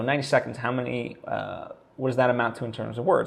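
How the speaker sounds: ordinary talk, nothing marked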